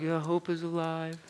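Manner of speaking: slow, halfhearted, lackluster tone with no triumph. Showing the congregation how not to say the response: halfhearted, not triumphant. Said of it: "Don't say it like".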